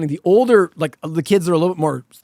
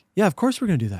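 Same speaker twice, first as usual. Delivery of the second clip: mock soft, plain, matter-of-fact, of-course tone; 6 dB quieter than usual. Discussing a show with others, the speaker imitates Eden's matter-of-fact tone. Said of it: "all of her dialogue is so matter of fact".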